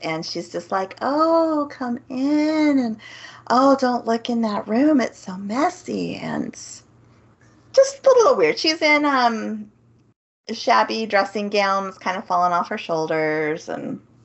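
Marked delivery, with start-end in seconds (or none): 1.0-6.2 put-on honey-sweet, welcoming, higher-pitched voice. Acting out what the aunt says while describing her: imitating a honeyed voice. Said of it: "like a honeyed voice".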